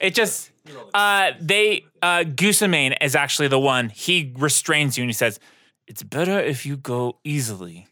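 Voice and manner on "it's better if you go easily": soft, hushed half-whisper, close to the ear. Voicing Gusamane restraining a player's character: half-whispering in the ear. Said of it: "He, like, whispered in your ear".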